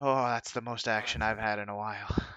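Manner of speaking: exhausted, worn-out, weary voice. Voicing a character who drops to one knee after a fight: exhausted, worn out. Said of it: "he drops down to one knee and".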